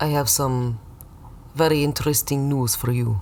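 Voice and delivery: put-on Russian accent. Playing the guy giving results back in a bit: sketchy russian guy accent. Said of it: "I know you have the Russian accent".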